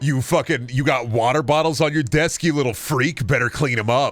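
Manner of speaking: put-on mean, domineering voice. Joking about being a mean dom: put-on mean dom voice. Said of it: "I couldn't do it without laughing".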